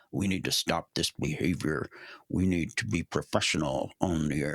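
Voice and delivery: voice dropped low. Quoting complaints from pilot forums, the speaker uses a lowered voice. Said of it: "You lowered your voice for that that quote".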